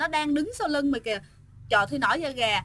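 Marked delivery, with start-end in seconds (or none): none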